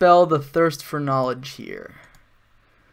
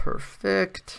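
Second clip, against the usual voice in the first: flat, soft, sarcastic tone. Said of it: "That was sarcasm".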